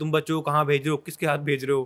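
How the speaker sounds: usual speaking voice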